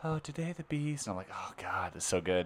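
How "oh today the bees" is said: soft, slightly high, gentle voice. Telling others about the bee lady on Instagram, imitating a soft voice. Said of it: "The soft voice".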